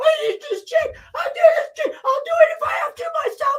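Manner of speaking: very high, loud, hoarse, squeaky little mouse voice. Imitate a man still trying to scream without a voice, in a little mouse-like voice. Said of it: "he sound like a little mouse".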